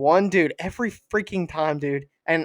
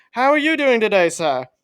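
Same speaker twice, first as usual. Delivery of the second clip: phony put-on British accent, pitched up; 6 semitones higher, 5 dB louder than usual. Retelling how a drive-thru worker greets customers: imitating a fake British accent. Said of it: "This dude is not British".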